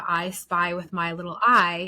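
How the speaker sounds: ordinary delivery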